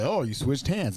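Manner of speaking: ordinary talk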